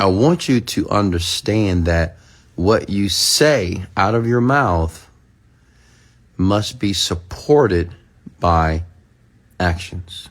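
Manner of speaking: slow, deliberate delivery, word by word. Repeating a point slowly so listeners get it: slow, deliberate delivery. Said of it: "Let me say it slowly for you so you can get it".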